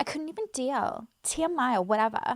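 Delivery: made-up-sounding, put-on Australian accent. Mocking how a video creator talks: mocking imitation of her Australian accent. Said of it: "The way she talks".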